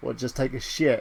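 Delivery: ordinary delivery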